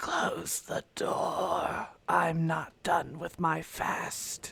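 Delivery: rasping, creaky voice of a starved ghoul. Narrating a scene, voicing an emaciated ghoul on the floor: raspy ghoul voice. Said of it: "in this raspy voice says".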